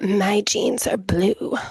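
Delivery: seductive, sultry, sexy delivery. Describing how a woman says her line, imitating a sexy voice. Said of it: "she says it in like this like sexy voice".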